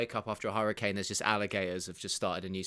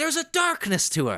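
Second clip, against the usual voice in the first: belted out loud, high and shrill; 9 dB louder than usual. Describing women the way Mike Rise would: Mike Rise impression. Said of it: "That's a great impression".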